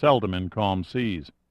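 ordinary delivery

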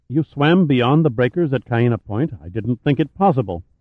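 ordinary delivery

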